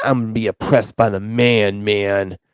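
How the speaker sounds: put-on stoner voice. Mocking a worry about losing identity, imitating a stoner guy. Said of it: "you sound like the stoner guy".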